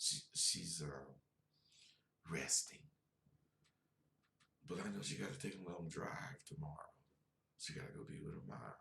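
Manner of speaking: speaking in a whisper. Talking late at night while someone rests nearby: whispering. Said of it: "I'm whispering because I don't wanna wake her up".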